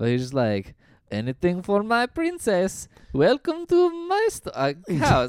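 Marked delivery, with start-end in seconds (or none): 1.1-5.3 put-on odd Eastern European accent, very high pitch. Describing the star of The Room; imitating his Eastern European accent. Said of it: "I actually channeled his accent".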